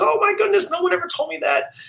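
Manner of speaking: put-on high-pitched elderly voice with Yiddish accent.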